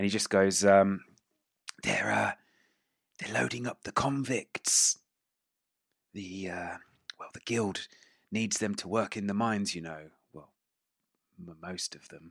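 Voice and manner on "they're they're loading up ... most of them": awkward, hushed, soft half whisper. Voicing a passenger leaning over to address another character: awkward half whisper. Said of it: "in, like, this awkward half whisper".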